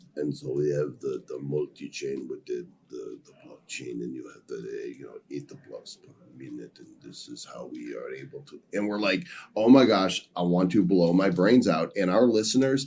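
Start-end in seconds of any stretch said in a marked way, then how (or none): 0.2-8.6 put-on heavy Russian accent, very soft, low and hushed. Retelling how an interview guest spoke, in a heavy thick Russian accent. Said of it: "thick Russian accent, which is fine, but it sounded like it sounded like this".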